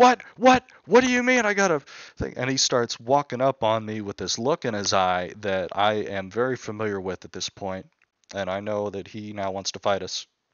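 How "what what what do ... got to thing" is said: frantic, very loud, very high shrill scream. Retelling how a prisoner reacted to being sent back: imitating someone screaming. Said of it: "starts screaming like".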